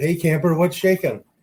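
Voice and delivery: acted-out shout. Retelling how a son-in-law called out on the speaker entering the kitchen, retelling a yell. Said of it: "and he yells out".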